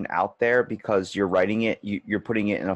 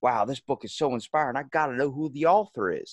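put-on Southern accent with raised pitch; 5 semitones higher than usual. Acting out a reader praising a book: Southern accent. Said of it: "I'm just gonna give him a Southern accent".

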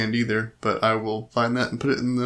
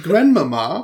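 put-on posh British voice, high and loud; 7 semitones higher, 8 dB louder than usual. Showing what sounds British, in a Little Lord Fauntleroy posh British accent. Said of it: "it sounds British. It sounds like Little Lord Fauntleroy".

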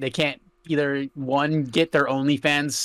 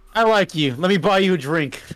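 higher, louder dude bro voice. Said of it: "why does your dude bro voice sound like".

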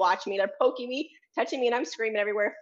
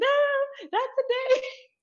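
very high, very slow, drawn-out kicking-and-screaming scream. Recalling being dragged out by their brother, acting out their own screaming. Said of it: "kicking, screaming like".

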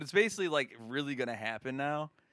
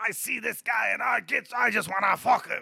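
bad, loud, raspy, shrill, rough squawking voice; 8 semitones higher, 5 dB louder than usual. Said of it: "That's a bad Gilbert Gottfried impression".

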